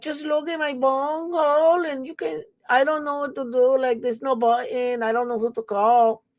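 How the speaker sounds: put-on high-pitched female voice with Spanish accent. Retelling what the Spanish-speaking guards would say: imitating Spanish-speaking female security guards. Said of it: "They were like".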